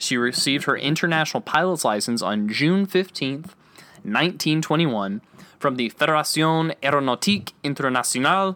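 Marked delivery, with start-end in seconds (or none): 5.6-8.6 French words said in a Spanish accent. Reading out a french organization's name: spanish accent on french words. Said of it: "that was definitely a Spanish accent for a French word".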